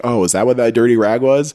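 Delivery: plain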